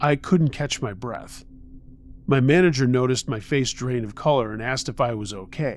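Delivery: plain reading voice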